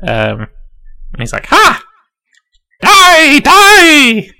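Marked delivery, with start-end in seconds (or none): 1.5-4.2 witch-like voice, much higher, louder. Voicing an axe-wielding fighter slashing at an ogre: possessed witch voice. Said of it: "Sounds like a possessed witch".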